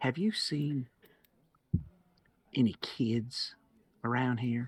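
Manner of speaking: voice brought down low, confidential and sidling. Asking someone who works here about missing kids: lowered voice. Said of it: "I lower my voice".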